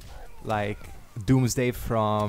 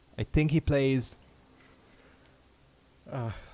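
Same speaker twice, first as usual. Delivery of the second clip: speaking through a yawn; 3 semitones higher than usual. Commenting on an opponent before the next match, yawning while talking. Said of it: "I'm sorry, yawning".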